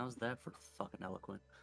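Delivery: said under one's breath. The player's character, leaving after a formal bow, muttered under breath. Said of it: "under my breath".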